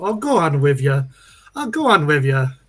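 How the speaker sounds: put-on Irish accent. Quoting a great aunt's favorite phrase, the speaker says it in an Irish accent. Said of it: "do an Irish accent".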